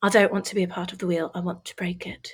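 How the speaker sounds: speaking in British accent. Asked by the other speaker to say the quote again, in a British accent. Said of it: "Say break the wheel with a British accent".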